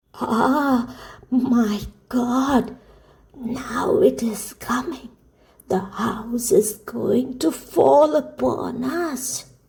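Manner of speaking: put-on quavering, trembling, frightened old woman's cry. Narrating Heidi, voicing the grandmother alarmed by blows on the hut, trembling voice. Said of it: "cried in a trembling voice".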